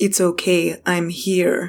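close, husky voice, very slow. Someone speaks into the fainting Mercy's ear, husky voice. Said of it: "You hear a husky voice in your ear".

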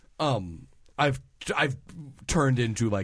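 plain

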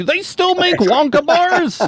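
put-on very high-pitched elderly man's voice. Mimic someone asking about non-standard candy, in an old man voice. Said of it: "old man voice over here is like".

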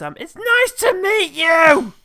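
put-on high, loud, slow child voice. Recalling a touching movie moment where a girl meets a man, in [name]'s little-kid voice. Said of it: "in that awful little kid way".

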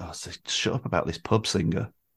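put-on dismissive tone. Speaker recalls past reaction to her mum's praise, mock eye-rolling dismissal. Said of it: "I used to roll my eyes".

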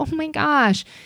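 high, sweet, mock innocent act. Mocking how privileged kids act toward a parent when refused, mock doe-eyed innocence. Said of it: "flip into this doe-eyed".

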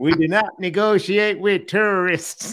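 measured, drawn-out delivery. Repeating an intro line, explaining it was meant as a George Bush impression. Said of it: "I was trying to do the George Bush".

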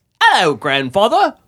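mock overly friendly British politeness. Imitating british people from a film, put-on overly friendly voice. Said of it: "In an overly friendly voice".

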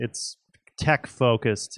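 plain

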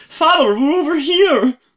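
squeaky, very high, loud Scottish puppet voice. Reading a story aloud, the speaker voices the daughter calling to her father: Scottish Muppets voice. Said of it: "I'm doing like kind of Scottish Muppets".

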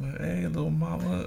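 put-on Latin American accent. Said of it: "They don't even talk like that".

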